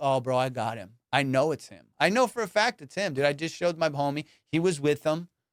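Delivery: plain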